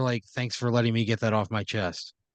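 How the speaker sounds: plain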